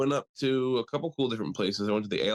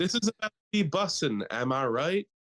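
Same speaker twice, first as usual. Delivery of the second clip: high voice with exaggerated slang delivery; 7 semitones higher than usual.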